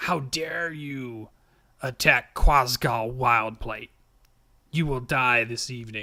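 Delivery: loud, ugly, horrible, throaty screeching voice. Narrator voices a struck enemy crying out at the player, horrible throaty screech. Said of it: "she screeches in this horrible, throaty voice".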